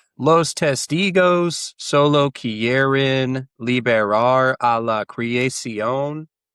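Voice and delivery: put-on Spanish spoken with a non-native English speaker's accent. A player voices his character in spanish, like a native english speaker speaking spanish. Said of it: "like a native English speaker speaking Spanish".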